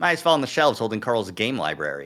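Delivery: ordinary delivery, nothing marked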